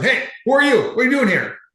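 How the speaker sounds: put-on very high, yelling security guard voice. Retelling a security guard's greeting on arrival: imitating a guard yelling. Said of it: "the guard's just yelling at me".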